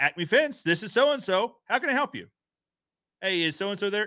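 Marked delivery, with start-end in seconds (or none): 0.0-2.3 cheerful voice, much higher. Speaker demonstrates how a business should answer the phone, cheerful phone greeting. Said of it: "if a cheerful voice answers".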